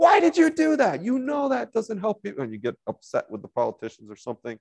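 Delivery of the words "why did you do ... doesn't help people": high mock yell, ranting. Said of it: "suddenly starts screaming at the T V".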